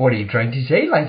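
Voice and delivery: Welsh-accented voice. Speaking to link in conversation: welsh accent impression. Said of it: "That's my Welsh impression".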